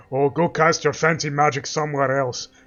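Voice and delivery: mocking guard voice. Retelling what a Whiterun guard just said, imitating a Whiterun guard. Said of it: "this motherfucker is going".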